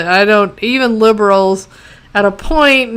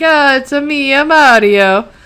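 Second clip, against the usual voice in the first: high, slow, stretched put-on Italian accent; 5 semitones higher than usual. Describing how everybody speaks in the show: Mario accent. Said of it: "everybody sort of speaks like".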